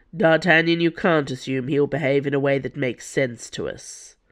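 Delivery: ordinary delivery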